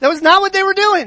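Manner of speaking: heavy stress on "not", pitched high. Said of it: "That's not what they were doing".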